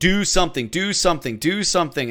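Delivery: plain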